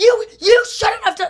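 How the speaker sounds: put-on shouting. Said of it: "they're just screaming at each other".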